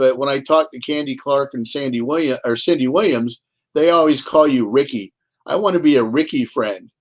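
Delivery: plain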